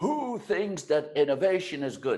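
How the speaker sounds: high, loud yell to a crowd. Speaker retells how a presenter yelled a question at his audience, retelling a yell. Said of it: "he yelled to the audience".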